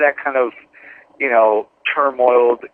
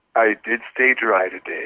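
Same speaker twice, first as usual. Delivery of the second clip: smooth, sultry, sexier on-air radio voice; 2 semitones lower, 4 dB quieter than usual. Told to use a radio voice, answering whether they stayed dry, in a sultry radio voice. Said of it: "Do I use my my radio voice".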